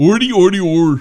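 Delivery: mock Swedish-sounding gibberish, put-on comic voice. Laughing along, doing the Muppet Chef voice. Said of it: "Sounds like the Muppet Chef".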